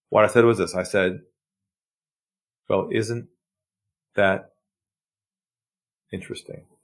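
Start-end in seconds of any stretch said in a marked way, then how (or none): 2.7-6.6 deliberately lowered, low, soft, calm, collected tone. Retelling what he said to a man after taking a deep breath: lowered voice. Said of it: "I lowered my voice".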